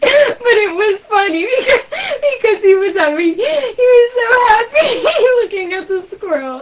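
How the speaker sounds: very high voice, giggling, laughing, near crying. Describing a hawk grabbing a squirrel just now, laughing while talking. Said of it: "I'm sorry I'm laughing".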